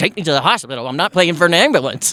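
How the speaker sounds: ordinary talk, nothing marked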